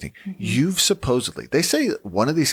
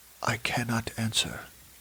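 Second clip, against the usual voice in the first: put-on European accent, much quieter; 8 dB quieter than usual. Mocking a pompous ghost expert, the speaker does his European accent. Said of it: "in his European accent".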